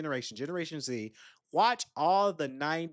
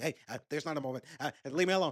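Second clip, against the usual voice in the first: very fast, rattled-off chatter. Retelling a funny movie scene, imitating Vince Vaughn talking fast. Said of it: "he's talking real fast, like".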